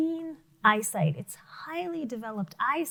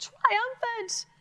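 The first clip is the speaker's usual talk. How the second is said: very high-pitched voice, way up top; 11 semitones higher than usual. Showing a class how to say the word: high voice. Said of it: "Say it high".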